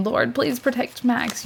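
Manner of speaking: acted hysterical sobbing. Retelling praying aloud on the drive to the ER, retelling a sobbing prayer. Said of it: "I'm like sobbing hysterically".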